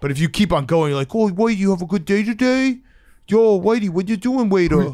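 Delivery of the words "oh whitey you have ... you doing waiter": put-on high doting baby talk. Showing how someone talks to a dog that isn't theirs, in baby talk to a dog. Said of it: "if you go full baby talk to a dog".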